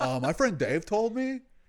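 put-on California accent. Describing how the people in the house imitated Dave, imitating Dave's California accent. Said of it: "he had us like super California accent".

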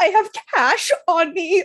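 drawn-out, high, loud, frantic, freaked-out voice. Speaker retells not knowing where she was going by train, reenacting freaking out. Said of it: "I'm like freaking out".

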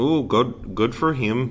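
put-on Canadian accent. Speaker reacts to finding out where someone was born, Canadian accent. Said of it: "That was my Canadian".

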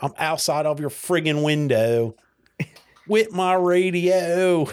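put-on South Philly accent, drawn-out radio voice. Showing which lines sound good in a south philly accent. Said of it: "you know what sounds are good with the South Philly accent".

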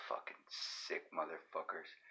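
revolted, breathy whisper under the breath. Cutting into a story about cyclists, disgusted. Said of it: "the disgust in your voice and face".

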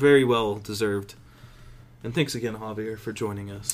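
low, quiet radio-announcer voice. Thanking guest Javier for joining the episode, in a mock NPR voice. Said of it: "Why am I talking like".

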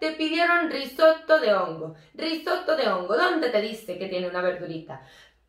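put-on poorly done Italian accent. Retelling an exchange about a risotto, the speaker voices Donato's questions: bad Italian accent. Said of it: "ese acento italiano".

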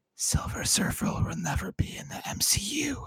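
slow, hushed, drawn-out, secretive whisper. Imagining coming up to someone on the spaceship to tell them something: acting out a whisper. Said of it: "I'd come up to you and whisper".

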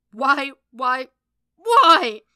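very loud, very high, anguished scream at full volume. Narrator reads Matt's line as he screams into a punching bag: screaming. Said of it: "He screamed into the bag".

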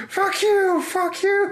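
mock, very high, very slow, drawn-out shouting. Retelling a film scene of yelling through the TV: imitating someone yelling. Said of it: "just starts yelling at him".

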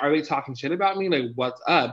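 plain

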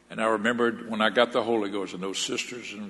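ordinary talk

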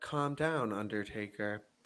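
very low, quiet, dead flat monotone. Retelling how Stephanie sounded this week: imitating Stephanie's monotone. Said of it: "super monotone this week".

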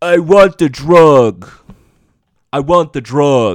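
loud, bad New York accent, "drug" drawn out. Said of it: "now he has a really shitty New York accent".

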